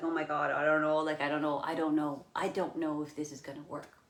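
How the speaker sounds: usual speaking voice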